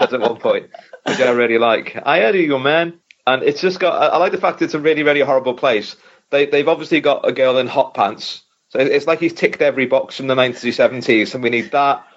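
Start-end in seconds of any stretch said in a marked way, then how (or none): 2.0-3.0 put-on over-the-top South American gangster accent, higher. Reviewing a film, speaker quotes the main gangster: put-on South American accent. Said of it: "how South American his accent is".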